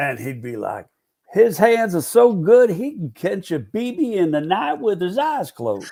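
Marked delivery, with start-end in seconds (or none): 1.3-5.9 thick South Carolina drawl, pitched up. Speaker quotes a man from south carolina, in a heavy southern drawl. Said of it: "heavy Southern drawl".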